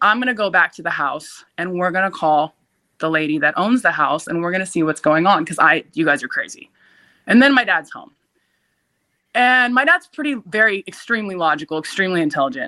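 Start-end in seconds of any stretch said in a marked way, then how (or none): none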